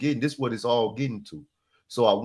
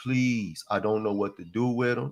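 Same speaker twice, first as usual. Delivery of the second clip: put-on crying, begging voice; 2 semitones lower than usual. Retelling how his mother cried and begged: imitating his mother crying and begging. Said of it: "My mom started crying, and she started begging".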